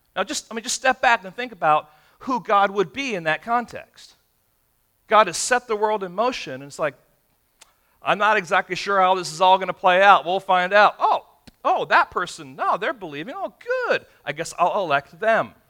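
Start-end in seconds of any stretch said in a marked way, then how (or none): 8.0-15.5 mocking, sardonic, swooping sarcastic sing-song. Acting out God unsure who will believe: sarcastic mock God voice. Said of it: "I wanna be obnoxious with being sarcastic".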